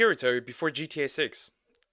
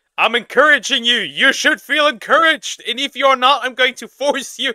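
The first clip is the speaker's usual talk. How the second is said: high, loud mock bossy cheering tone. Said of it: "she really put, like".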